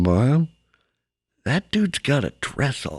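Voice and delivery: slow, hushed half-whisper out the side of mouth. Retelling a girl at Goodwill half-whispering to her mom: imitating a half-whisper. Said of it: "whisper to her mom out the side of her mouth".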